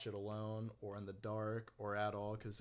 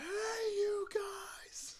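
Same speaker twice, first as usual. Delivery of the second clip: mock, very high-pitched screaming voice. Imitating a co-host who screamed the whole time: imitating someone screaming. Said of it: "Steven basically just screamed the entire time".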